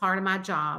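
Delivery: plain reading voice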